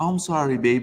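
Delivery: put-on elderly woman's manner of speech. Retelling a woman's reply when asked to put out her cigarette, imitating an old lady's talk. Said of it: "You know how old people talk".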